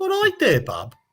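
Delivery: mock Birmingham accent. Retelling how a partner's birmingham family greets people: imitating birmingham in-laws' greeting. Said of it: "They go".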